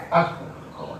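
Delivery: soft, reverent whisper.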